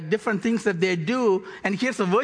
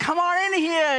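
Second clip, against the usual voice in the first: mimicked shouting, higher; 9 semitones higher than usual. Acting out temple merchants calling people to their booths: imitating merchants shouting. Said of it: "they're shouting".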